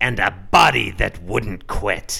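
loud, creaky, raspy voice. Describing a comic's final panel, reading Aunt Gussie's line in the Aunt Gussie voice. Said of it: "I don't know why I started doing that voice".

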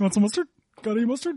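goofy, silly cartoon talking-giraffe voice. Voicing the character the other speaker just described: funny talking giraffe voice. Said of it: "a funny talking giraffe".

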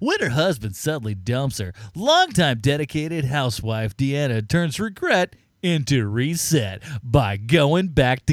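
obnoxious studio executive voice, slick marketing-pitch delivery. Showing how this text must be read, like an asshole studio executive. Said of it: "you have to read it like a like an asshole studio executive".

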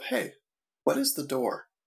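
caring, kindly, compassionate, sympathetic voice. Playing a character who asks another character a question: compassionate. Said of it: "as compassionately as Dilly can".

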